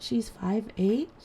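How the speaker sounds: imitated hushed whisper. Retelling people whispering at the doctor's, imitating people whispering. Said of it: "so they're whispering and they're like".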